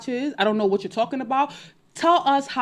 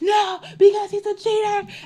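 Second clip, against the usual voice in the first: put-on, theatrical, very high crying shout; 11 semitones higher, 4 dB louder than usual. Recounting a hotel fight with a cheating man, retelling own shouting. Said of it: "I started shouting".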